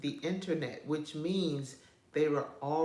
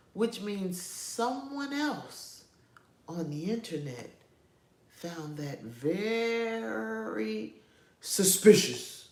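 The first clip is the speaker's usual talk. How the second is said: put-on voice, pitched up, drawn out; 5 semitones higher than usual. Telling about a labeled podcast clip: Umar Johnson voice. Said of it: "in my Umar Johnson voice".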